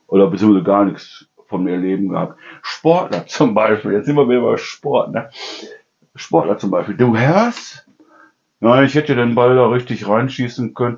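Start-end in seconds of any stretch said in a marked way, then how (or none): 8.8-10.9 flat, monotone, joyless, no emphasis at all. Describing how athletes talk, quoting one while imitating flat, unemphatic delivery. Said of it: "Die ohne Betonung, ohne irgendwie, ja, Freude an dem Text".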